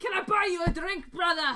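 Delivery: put-on dwarf voice with Scottish accent. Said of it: "All dwarves are secretly Scottish".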